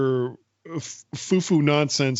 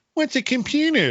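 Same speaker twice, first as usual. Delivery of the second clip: very high, sneering, mocking little-girl voice; 12 semitones higher than usual. Recalling a favorite commercial, quoting the little girl in it; mocking little-girl imitation. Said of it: "You can tell by the tone of my voice".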